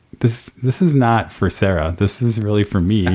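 normal talking voice

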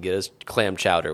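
ordinary delivery

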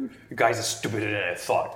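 angry, furious drow voice. Voicing an angry drow who glares at the interrogator: angry drow voice. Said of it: "he's really angry".

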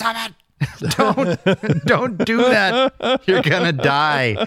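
acted-out very high, very slow, drawn-out yell. Retelling telling a kid off from the boat: retelling own past yelling. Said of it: "We're just yelling".

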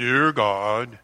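pulpit-style, preacher-like praying voice. Mocking how someone sounds when asked to pray aloud: prayer voice. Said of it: "go into their prayer voice".

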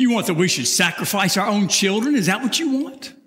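mock scornful, biting sarcastic delivery. Retelling the defendant's most sarcastic question to god: acting out biting sarcasm. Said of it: "the most sarcastic comment of all".

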